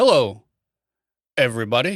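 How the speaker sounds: put-on stop-start presenter voice with pauses. Describing a YouTube guy he gets recommended, imitating his paused voice inflection. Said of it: "His paused voice inflection".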